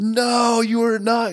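acted, very high, very slow, drawn-out scream. Retelling watching the show and shouting at a swindler: imitating own screaming. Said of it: "I was screaming".

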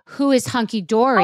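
ordinary delivery

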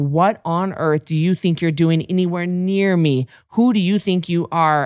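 put-on scornful, contemptuous, cutting tone. Retelling how an admired older girl glared at her: imitating a glaring girl. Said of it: "she just glared at me like".

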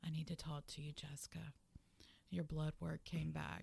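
low, quiet, grave, level, serious monotone. Retelling how her doctor broke news, imitating the doctor's serious monotone. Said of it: "they get that real serious, monotone, quiet voice".

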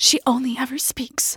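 breathy hushed voice. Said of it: "like this".

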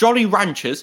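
slipped-in British accent. Asking about a candy's name, slipping into a British accent. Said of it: "I don't know why I said that in a British accent".

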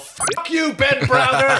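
put-on shouting. Retelling a reaction to a scene while watching: retelling own yell. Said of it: "And I yell".

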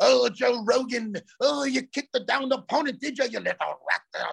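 put-on strong twangy Irish accent. Mocking a fighter's texts, imitating Conor McGregor's Irish twang. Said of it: "he does the extra with the Irish fucking shit".

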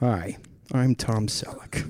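soft, slow, disappointed, apologetic tone. Joking about a made-up news show, doing a Tom Selleck impression. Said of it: "He's always a little bit disappointed that he has to talk".

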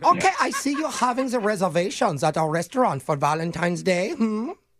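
put-on high, heavy German accent. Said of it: "our helpful resident German Hans Gluber".

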